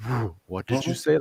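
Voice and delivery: tough-guy western gunfighter tone. Retelling the wife's reaction to overhearing a word: imitating wife's Clint Eastwood tone. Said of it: "Like freaking Clint Eastwood type thing".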